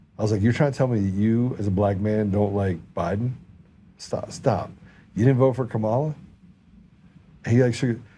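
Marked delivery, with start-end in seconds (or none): none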